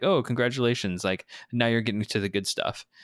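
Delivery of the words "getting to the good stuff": ordinary talk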